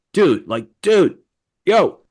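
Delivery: put-on manly, dude-bro delivery. Telling Mike about a confusing conversation, imitating someone in a put-on manly voice. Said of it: "manly voice".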